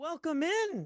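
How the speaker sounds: voice jumping up high. Opening by welcoming everybody in, voice going really high. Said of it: "my voice just went really high there".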